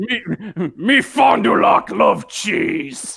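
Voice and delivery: put-on robot character voice. Joking that Fond du Lac sounds like the worst Dinobot, speak its lines in a Dinobot voice. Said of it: "it sounds like the worst goddamn Dinobot".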